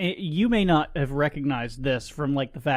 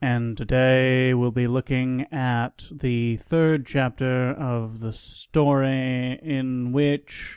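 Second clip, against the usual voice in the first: boring, bedroom-style radio host announcer voice. Continuing the introduction after being asked for it: NPR voice. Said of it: "Do it a little bit more N P R".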